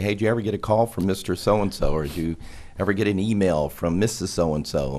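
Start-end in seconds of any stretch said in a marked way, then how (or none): none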